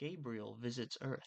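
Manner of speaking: put-on storybook narration voice. Doing a story summary in a put-on narration voice. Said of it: "Let me do my best narration voice".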